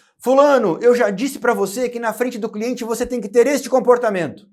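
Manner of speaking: high, loud, stern delivery.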